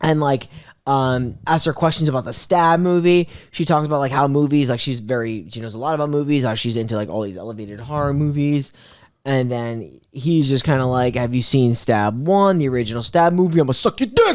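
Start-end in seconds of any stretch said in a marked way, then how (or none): 11.2-14.4 put-on mocking voice. Retelling a horror movie killer's phone call as a Shane impression. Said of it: "He does his best Shane impression".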